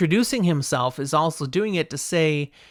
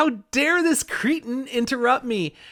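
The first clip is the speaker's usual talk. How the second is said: offended, indignant high lord's voice, pitched up; 7 semitones higher than usual. A storyteller voices Darlin, a High Lord interrupted by Matt: offended Darlin voice. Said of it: "even more offended now that Matt would dare".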